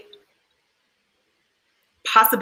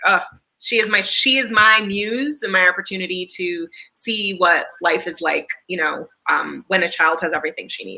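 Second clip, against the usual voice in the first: plain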